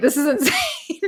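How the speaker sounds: very high, giggling through the words. Reading a listener's scary story aloud and apologizing: laughing while talking. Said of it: "I feel bad I'm laughing".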